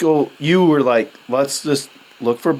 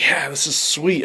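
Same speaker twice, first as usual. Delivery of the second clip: put-on excited voice; 3 dB quieter than usual. Retelling walking up to a freshly shot deer: imitating own excited past self. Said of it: "I'm all excited".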